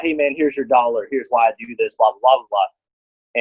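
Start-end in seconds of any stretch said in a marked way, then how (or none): none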